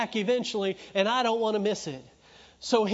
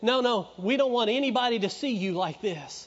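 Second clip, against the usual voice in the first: usual speaking voice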